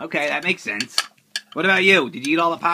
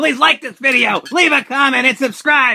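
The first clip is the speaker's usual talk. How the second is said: energetic, much higher and louder; 10 semitones higher, 5 dB louder than usual. Showing how a video outro should be said: with energy. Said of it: "You're supposed to say it with energy".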